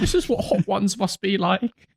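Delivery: mock weepy, blubbering, high, tearful sobbing voice. Retelling someone sitting in the corner after spicy food, imitating someone sobbing. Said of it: "Sat there sobbing in the corner".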